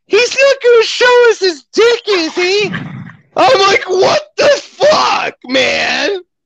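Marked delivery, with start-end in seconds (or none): 0.1-2.7 sweet, high, small little voice. Telling a story and quoting Amanda's remark: imitating Amanda's sweet little voice. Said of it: "sweet little voice over here goes".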